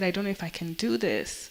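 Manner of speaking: usual speaking voice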